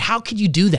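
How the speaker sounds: normal talking voice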